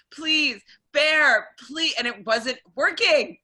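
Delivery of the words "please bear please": high, desperate, begging, pleading scream. Speaker retells begging bear to win a match, retelling screaming at the computer. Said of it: "I was screaming at this".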